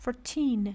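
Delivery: put-on fourteen with stress on second syllable teen. Teaching numbers in class, stress on teen in fourteen. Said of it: "Stress is on teen".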